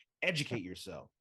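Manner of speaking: cross, angry-sounding tone. Telling listeners to go watch some wrestling: angry-sounding. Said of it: "that sounded angry".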